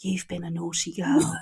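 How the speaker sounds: soft, low, hushed, close stage whisper. Imagining a man half-whispering in the listener's ear, acting out a half-whisper. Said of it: "he like whispers in your ear".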